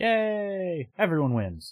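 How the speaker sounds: very high, mock-bright sarcastic cheer, yay stretched. Reacting to news of a two-part arc about a favorite character: sarcastic cheer.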